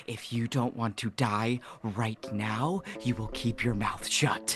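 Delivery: low whisper. A player's character threatens a woman, speaking into her ear, whispered threat. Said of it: "I say in a whisper in her ear".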